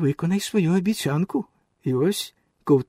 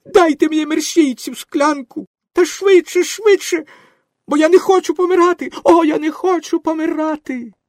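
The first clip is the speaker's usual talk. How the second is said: very high, shrill shrieking and squealing; 11 semitones higher, 8 dB louder than usual. A feverish character begs to be given the medicine: shrieking. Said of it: "заверещав Пінокіо".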